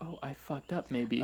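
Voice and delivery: ordinary talk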